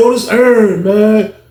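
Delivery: the most pitiful, high, slow, pathetic voice. Retelling an encounter, imitating Earn's pathetic voice. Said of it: "He had the most pathetic voice in the world".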